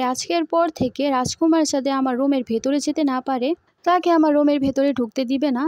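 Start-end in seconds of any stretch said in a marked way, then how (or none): none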